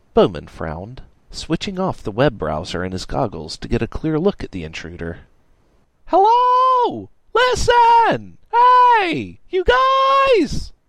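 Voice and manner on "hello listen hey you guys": put-on very high, very slow, drawn-out, drunken yelling scream. A drunk Tallboy stumbles into a computer repair shop, drunk screaming. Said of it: "This guy was clearly too drunk to realize he had stumbled into a computer repair shop, ... Tallboy screamed".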